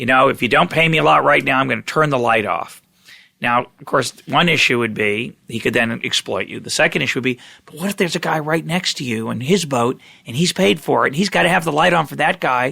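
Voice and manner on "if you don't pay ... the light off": loud booming shout through a megaphone. Describing a lighthouse guy calling out to ships, booming megaphone call-out. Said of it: "call out in a in a booming uh, voice through a megaphone".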